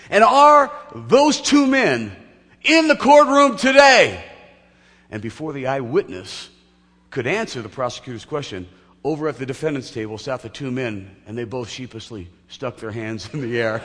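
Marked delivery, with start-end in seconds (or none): 0.1-4.2 resounding, very loud, booming, drawn-out, high-pitched delivery. Retelling a courtroom story, the prosecutor questions the eyewitness, booming voice. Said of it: "in a booming voice".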